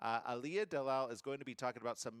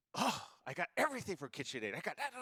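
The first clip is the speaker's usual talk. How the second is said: put-on woman's gasping voice, higher; 5 semitones higher than usual. Retelling his partner hearing the guest's brand name: imitating his partner. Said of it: "that's just my version of her".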